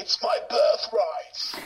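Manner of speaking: hammy, corny, cheesy delivery, pitched high. Retelling a film performance with a cheesy put-on English accent. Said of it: "a cheesy sort of".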